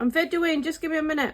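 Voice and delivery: calling out.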